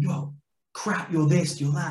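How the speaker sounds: put-on heated barking, volume kept contained. Retelling how one player shouted at another: imitating Jim shouting. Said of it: "Jim shouted at him".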